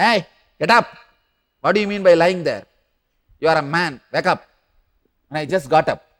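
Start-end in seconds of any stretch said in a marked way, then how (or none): none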